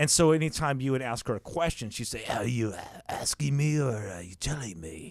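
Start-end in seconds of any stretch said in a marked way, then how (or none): 2.3-5.1 low, slow, creepy teacher voice. Retelling what a cigar-smoking teacher said when asked questions: Miss Cushing voice. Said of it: "do the Miss Cushing voice".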